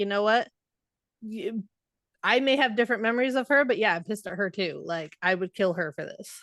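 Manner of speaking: ordinary talk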